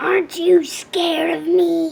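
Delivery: growling dragon voice. Reading a story aloud, narrator voices the dragon questioning Greta: growling dragon. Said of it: "He growled".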